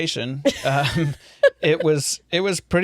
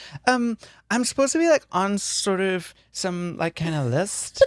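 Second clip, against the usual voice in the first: guileless, innocent, halting delivery; 3 semitones higher, 3 dB quieter than usual. Retelling how the other speaker asked about the list: imitating an innocent voice. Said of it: "such an innocent way".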